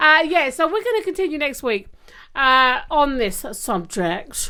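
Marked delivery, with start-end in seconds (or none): 2.9-4.5 odd put-on celebrity voice leaning into subject. Saying the topic continues next week, in a Sean Connery impression. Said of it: "I felt Sean Connery needed to come into it".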